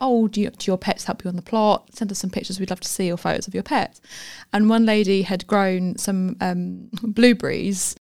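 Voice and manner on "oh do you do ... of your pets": plain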